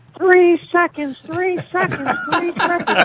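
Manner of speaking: very high, hammering, insistent, repeated scream. Retelling a game where a fan was screaming at the official: imitating a woman screaming. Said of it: "this woman is screaming at me".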